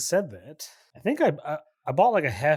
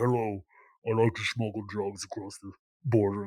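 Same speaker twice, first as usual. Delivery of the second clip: low, disguised, anonymous-source documentary voice; 6 semitones lower, 5 dB quieter than usual. Imitating how another speaker's voice sounds: disguised anonymous-interview voice.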